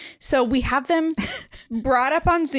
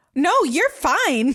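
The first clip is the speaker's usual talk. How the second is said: mock gushing, excited delivery; 3 semitones higher than usual. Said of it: "it was the excited book boyfriend".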